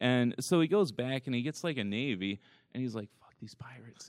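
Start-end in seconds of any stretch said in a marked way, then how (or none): 3.2-4.1 breathy, hushed whisper, barely voiced. Retelling a story about pirates, the speaker whispers what a man said. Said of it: "I don't know why I whispered there".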